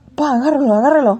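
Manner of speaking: put-on panicked shout. Retelling losing the new cat under cars, calling to dad: retelling a panicked shout. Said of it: "we were panicking".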